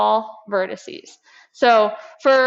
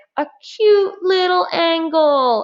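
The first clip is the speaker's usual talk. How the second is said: put-on high, slow, drawn-out baby talk; 6 semitones higher than usual. Show a memory trick for acute angles while holding up your fingers, in a baby voice. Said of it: "in like a baby voice".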